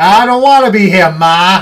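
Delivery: very loud, high, put-on New Jersey accent. Recapping a movie character's lines: New Jersey accent. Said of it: "the New Jersey accent?".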